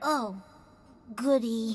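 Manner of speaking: unhappy, unenthused, dispirited tone. A game character answers the news that the ship is fixed, sounding unhappy. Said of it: "You don't sound very happy".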